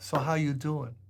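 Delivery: thick Bronx accent. Demonstrating how people say good morning in the Bronx, thick Bronx accent. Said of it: "That's your prototypical New York accent".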